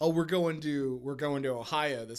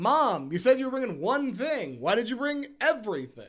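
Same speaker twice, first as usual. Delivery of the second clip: acted-out teasing, joking tone, high and raised; 8 semitones higher, 6 dB louder than usual. Acting out what they'll say to Mom about bringing food: joking tone. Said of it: "I'll say it in that joking way".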